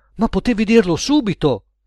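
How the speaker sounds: sudden, high-pitched, exclaiming voice. A narrator reads one character answering another, exclaiming. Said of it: "esclamò Edoardo".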